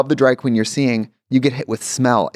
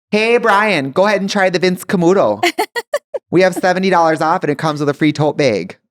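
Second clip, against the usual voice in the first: put-on thick, high-pitched Midwestern saleslady accent; 6 semitones higher than usual. Retelling a fragrance-department lady calling to Brian on lunch break; strong Midwestern accent. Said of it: "the strong Midwestern accents".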